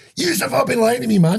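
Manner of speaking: furious, very high-pitched, raging outburst. Retelling bursting into the house after hearing there's no santa: retelling an angry outburst. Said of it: "I'm raging".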